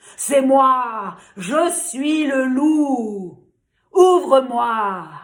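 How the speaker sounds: moi stretched out, slow and menacing. Narrator reading a story voices the wolf at the pig's door, Big Bad Wolf voice. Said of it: "il y avait le loup, le grand méchant loup. / Mais le loup était un loup intelligent. / Mais le loup était un loup intelligent".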